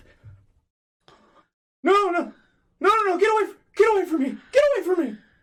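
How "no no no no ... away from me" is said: high, loud, panicked, terrified screaming. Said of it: "something along the lines of".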